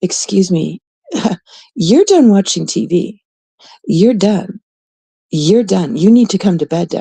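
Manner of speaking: put-on reproachful, guilt-tripping, nagging tone. Voicing a cat that stares until Daddy comes to bed, guilt-tripping.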